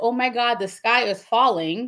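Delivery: ordinary delivery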